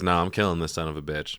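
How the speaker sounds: ordinary talk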